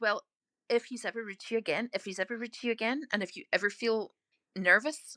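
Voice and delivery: normal talking voice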